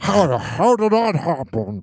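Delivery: put-on old-fashioned TV interviewer announcer voice. Mocking an interviewer asking DiCaprio about turning fifty; boomer news announcer voice. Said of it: "All boomers talk like this".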